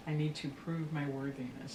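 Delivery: normal talking voice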